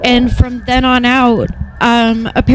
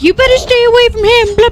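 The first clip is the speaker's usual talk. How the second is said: mock scream, pitched much higher; 11 semitones higher than usual. Retelling how a girl came up from behind at the locker, imitating someone screaming. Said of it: "starts screaming".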